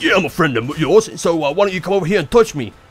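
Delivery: gruff, loud, fast gangster voice.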